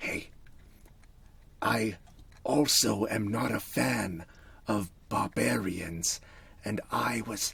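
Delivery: hushed, half-whispered near-whisper aside. In a role-play, the character moves away from a companion toward a stranger: almost a whisper. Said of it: "almost like whisper to him".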